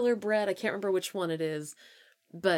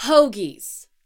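very loud, blurted shout, far too loud; 4 semitones higher, 10 dB louder than usual. Blurting out a food word in conversation: said too loudly. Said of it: "I didn't mean to say that so loudly".

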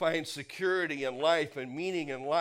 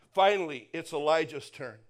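ordinary delivery

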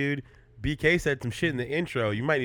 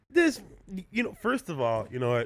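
ordinary talk, nothing marked

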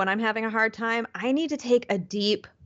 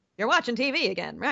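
put-on 1920s gangster voice, much faster. Quoting Mr. Ming scolding someone, as a 1920s gangster. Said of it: "Ming is a 1920s gangster voice".

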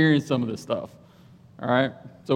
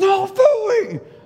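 play-acted, very high, shrill, enraged scream; 5 dB louder than usual. Retelling yelling a command at a dog in training: retelling a furious scream. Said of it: "the loudest I've ever screamed in my life".

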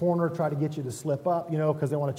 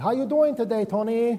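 put-on Korean accent, high-pitched and raised; 8 semitones higher, 5 dB louder than usual. Retelling how his boss greets him at work, imitating Joyce's Korean accent. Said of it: "she says in that accent".

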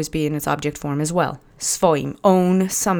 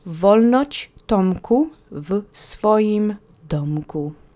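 each word slowly drawn out at a careful teaching pace; 3 semitones higher than usual. Teaching a phrase for learners to repeat after you, slow. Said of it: "I'll say it slowly".

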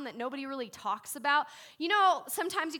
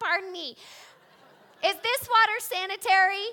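put-on goofy voice, higher and louder; 6 semitones higher, 6 dB louder than usual. Imagining Gideon on a backpacking trip: goofy Gideon voice. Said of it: "this is the last guy that you invite".

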